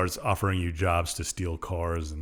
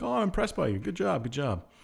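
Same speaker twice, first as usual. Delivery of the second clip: high, impressed woman's voice. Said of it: "She's like".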